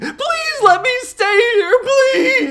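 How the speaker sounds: very loud, very high, drawn-out screaming plea. Retelling a man begging on his knees, imitating his screaming plea. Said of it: "starts screaming".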